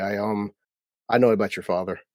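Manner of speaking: plain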